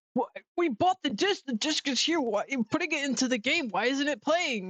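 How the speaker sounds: acted high-pitched, mad, worked-up angry rant. Retelling someone's reaction to a slow game download: imitating someone angry. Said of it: "He got so mad".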